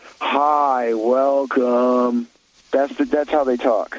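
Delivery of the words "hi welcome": unmotivated, bored drawl, level with zero interest. Imitating an unmotivated desk greeter's tone: imitating a bored Gen Z drawl. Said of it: "I'll give you the tone".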